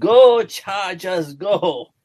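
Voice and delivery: put-on Jamaican accent, loud, high, cheering. Quoting a wise man's saying the way he said it: Jamaican accent. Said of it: "in a Jamaican accent".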